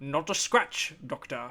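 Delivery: failed put-on German villain accent, missing the mark. Quoting a character's line from a movie, in an accidental Sean Connery voice. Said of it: "I don't know why I'm sounding like".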